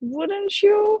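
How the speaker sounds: hopeful rising pitch on wouldn't you. Demonstrating question tags, rising pitch on "wouldn't you". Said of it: "And it goes up".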